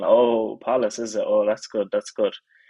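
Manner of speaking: speech through laughter. Retelling an interview reaction after a game: imitating Jacob Ramsey laughing. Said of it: "he was kinda laughing and saying".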